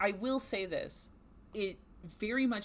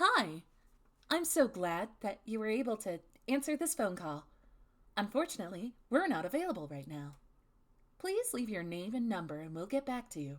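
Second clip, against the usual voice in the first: bright, chirpy put-on plastic doll voice. Recording a voicemail greeting in a Malibu Barbie voice. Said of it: "Time for Malibu Barbie".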